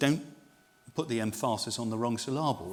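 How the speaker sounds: usual speaking voice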